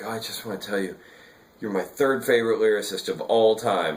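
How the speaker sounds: play-acted, weepy, teary voice. Retelling his own words to a songwriter he admired: retelling own weepy words. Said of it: "I'm getting all, like, weepy".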